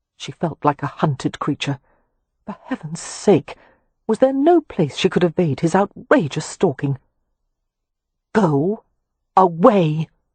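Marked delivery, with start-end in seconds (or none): 8.3-10.1 scornful, precise enunciation, every word spaced out. Reading a novel aloud, a woman tells an intruder to leave: scornful, precise enunciation. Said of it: "enunciating each word with scornful precision".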